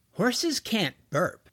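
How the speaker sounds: doubting, suspicious voice. Jack answers a kid's voice, suspicious tone. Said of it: "George detected suspicion in his voice".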